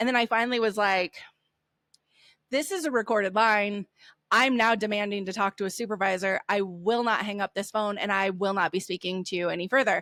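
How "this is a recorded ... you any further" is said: plain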